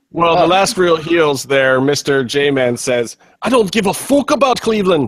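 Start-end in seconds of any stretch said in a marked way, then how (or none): 3.4-5.0 put-on Irish accent, pitched up. Quoting what Mr. J-Man says for the show, in an Irish impression. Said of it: "Irish impression".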